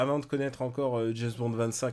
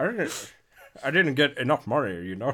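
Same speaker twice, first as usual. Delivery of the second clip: put-on elderly man's Scottish film-star voice. Quoting someone doing his Scottish act: old Sean Connery voice. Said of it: "c'est la voix du Sean Connery vieux que tu fais".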